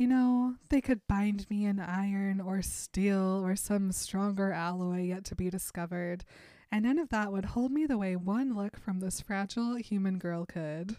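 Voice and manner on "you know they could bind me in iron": usual speaking voice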